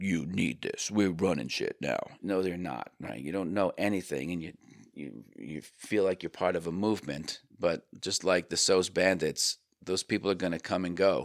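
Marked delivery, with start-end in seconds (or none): 0.0-2.0 low, commanding, self-assured, authoritative voice. Mocking marketing people who push products, mock low authoritative voice. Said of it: "speaking with a low authoritative voice".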